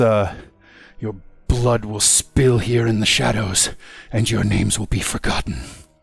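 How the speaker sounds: growled-out, villain-style voice. Storyteller voicing a character threatening the players, growling. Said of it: "He growls out this".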